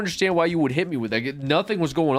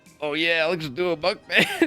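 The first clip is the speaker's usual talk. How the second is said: sneering, mocking put-on voice; 2 semitones higher than usual. Repeating a viewer's comment from chat: mocking imitation of a viewer. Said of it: "shitting on the way that they said that".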